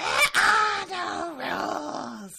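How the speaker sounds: drawn-out, booming, very high, loud arena announcer. Retelling a character's note like an over-the-top arena announcer. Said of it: "the guy doing the announcements for, like, the Thunderdome".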